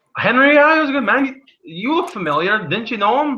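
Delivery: put-on Scottish accent with pitch pushed very high. Voicing a character in a role-play scene answering about a dead man, in a Scottish accent. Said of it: "Why do you sound like a Scottish Woody Allen?".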